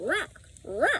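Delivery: high-pitched, croaking raven-like voice. A narrator reads the raven answering Annie, in Rock the raven's croak. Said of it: "croaked the raven".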